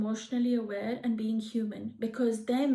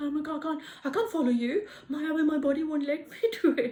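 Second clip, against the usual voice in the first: acted-out panic, voice pitched higher; 4 semitones higher than usual. Acting out refusing a Pharaoh's order to kill: imitating a panicked refusal. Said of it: "I'll have a panic attack".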